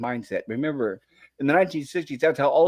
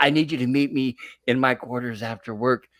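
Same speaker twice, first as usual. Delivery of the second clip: put-on whisper. Acting out a captain secretly calling a crew member: Captain Kirk whispering. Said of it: "he's whispering to his communicator".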